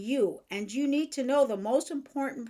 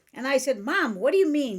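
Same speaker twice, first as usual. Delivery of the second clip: ordinary talk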